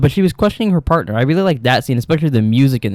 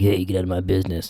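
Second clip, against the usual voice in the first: really deep, heavy, bottomed-out low voice; 5 semitones lower, 7 dB quieter than usual. Retelling what a character said last episode, imitating her really deep voice. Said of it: "She got a really deep voice like that".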